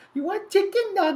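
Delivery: very high, squeaky, goofy, silly cartoon voice. Chatting during a dice game, copying a voice someone used earlier: high silly voice. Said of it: "That's the voice I got from whatever whoever said the cake pop thing".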